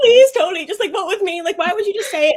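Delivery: very high, loud pleading in a little meltdown. Retelling a contestant's meltdown, begging tony: imitating j s pleading in a meltdown. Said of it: "watching his little meltdown with Tony where he's like".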